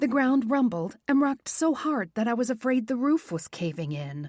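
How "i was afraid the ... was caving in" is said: ordinary delivery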